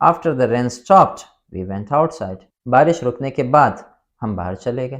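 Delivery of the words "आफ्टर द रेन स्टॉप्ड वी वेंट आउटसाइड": brief pause after the word stopped. Explaining how a sentence's two parts are separated, short pause after stopped. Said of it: "ये sentence मैंने एक साथ नहीं पढ़ा".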